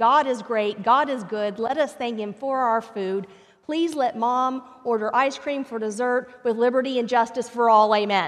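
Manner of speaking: put-on gracious, very loud voice carrying across the room. Retelling a story where a boy says grace: imitating a very loud prayer. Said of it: "very loudly, where everyone could hear".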